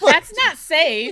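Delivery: slow, high, drawn-out disbelief spoken through laughter.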